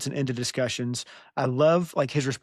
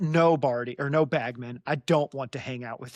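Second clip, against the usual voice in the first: put-on impatient tone. Acting out a character refusing to hang out: putting on impatience. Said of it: "a semblance of his old impatience shows up".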